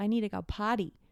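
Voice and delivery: put-on American accent. Explaining what american children say, in an american accent. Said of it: "they say that in an American accent".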